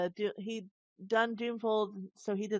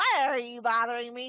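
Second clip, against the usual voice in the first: put-on grumpy old man voice, louder; 3 semitones higher, 5 dB louder than usual. Imitating a game character's sound bite: Jajax grumpy old man voice. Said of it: "he sounds like a grumpy old man from Bree".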